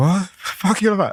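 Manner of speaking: high, incredulous outburst. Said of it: "she's like".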